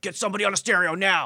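play-acted, high, barked shout projected loudly. Speaker quotes a collaborator demanding music on set, retelling a shouted order. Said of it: "they'd be like".

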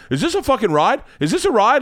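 loud, very high-pitched, carrying outburst, not whispered. Retelling a parent's remark on a ride: imitating dad talking loudly. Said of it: "my dad has no ability to talk in, like, a secret".

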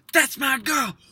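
high, loud cheering yell at full volume. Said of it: "as loud as she can in the movie theater".

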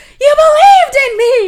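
shrill, very high, very loud screaming. Retelling a woman screaming after a man who walks away, retelling a scream. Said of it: "she just screams".

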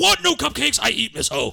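play-acted angry, high, rough, pissed-off outburst. Retelling a trailer scene: imitating a pissed-off character. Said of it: "all pissed off".

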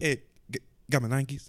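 nonchalant, offhand delivery. Retelling how someone in a video showed off his shoes: imitating a nonchalant delivery. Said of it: "he says it so nonchalant".

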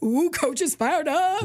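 high, giggly, teasing student voice.

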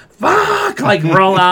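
very slow, drawn-out, put-on scream of pain. Speaker recounting a tooth being pulled at the dentist, retelling screaming in pain. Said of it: "And I was screaming".

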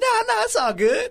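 very high, dismissive brush-off tone. Retelling a coach's answer about his team, imitating Dabo Swinney, voice gone high. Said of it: "his voice got high".

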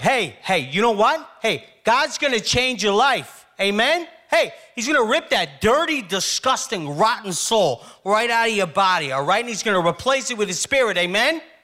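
high-pitched revival preacher voice, hammering each point. Retelling a tough man's speech about God changing lives: imitating Ronnie. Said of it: "He was like".

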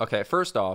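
ordinary talk, nothing marked

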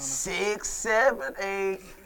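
very slow, drawn-out delivery of a number. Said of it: "I gotta say it slow?".

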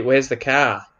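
put-on Australian accent. Comparing accents, the speaker shows how people in australia say it, australian accent. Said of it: "in Australia, they say".

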